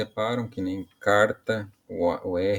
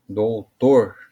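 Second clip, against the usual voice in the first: Doutor called out, stress on tor; 7 dB louder than usual. Finding the strongest syllable, as if calling someone: called out, stress on tor in Doutor. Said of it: "como se estivesse chamando".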